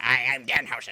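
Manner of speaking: loud, nice-but-evil, friendly yet evil tone. Showing what a wrestler sounds like: Danhausen voice. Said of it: "And he sounds like this".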